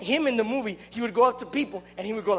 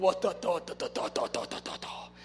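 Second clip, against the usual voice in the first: breathy, whispered character voice; 5 semitones lower, 8 dB quieter than usual. Retelling how a movie character dressed as Scarface talked: Scarface impression. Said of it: "He would talk like that".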